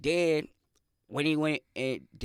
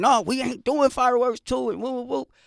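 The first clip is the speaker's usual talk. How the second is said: high, loud, screamed and yelled outburst; 9 semitones higher, 6 dB louder than usual. Retelling what he said back then, imitating someone screaming and yelling. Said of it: "when he screamed and yelled".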